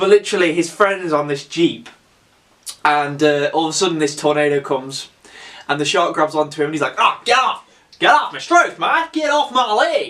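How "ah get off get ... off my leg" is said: high put-on Australian accent, yelled. Retelling a shark scene, voicing the friend the shark grabs, imitating an Australian accent. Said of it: "He's Australian, I really apologise for that".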